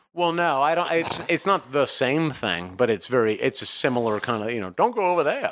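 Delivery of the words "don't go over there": put-on mid-Atlantic accent, pitched up. Speaker gives an example of a similar kind of voice, in a fake mid-Atlantic accent. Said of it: "that fake mid-Atlantic accent".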